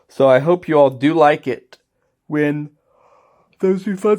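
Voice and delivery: words stretched by a yawn. Speaking late at night, hoping the audience likes the result, yawning while talking. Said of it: "Sorry, I'm yawning".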